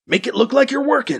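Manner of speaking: raspy theatrical whisper. A character speaks to his companion as they cross into the worker section, raspy loud whisper. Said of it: "Brady Thomas rasps in a loud whisper".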